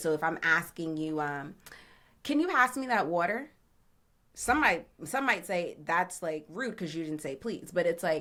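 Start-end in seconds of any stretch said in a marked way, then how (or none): 2.2-3.5 pitch rises at the end on water. Showing a jersey tone when asking for water, rising at end on water. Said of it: "my tone and the way that I ended the sentence and I went up".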